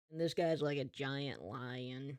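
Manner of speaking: normal talking voice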